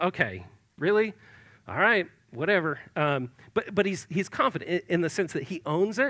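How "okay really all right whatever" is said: put-on, swooping, sarcastic, resigned tone. Acting out Jonathan answering his father Saul: put-on sarcastic Jonathan voice. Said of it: "there's almost that sense of".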